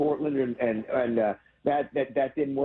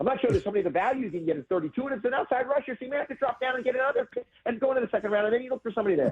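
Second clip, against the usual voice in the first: very fast, pitched-up sports analyst patter; 8 semitones higher than usual. Talking about draft picks, doing a Mel Kiper impression, talking fast. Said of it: "I'm trying to sound like Mel Kiper right now".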